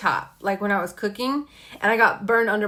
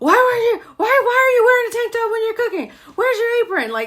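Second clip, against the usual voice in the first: put-on yell, higher and louder; 13 semitones higher, 5 dB louder than usual. Retelling how the partner reacts when she gets hurt: imitating partner yelling. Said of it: "he starts yelling at me like".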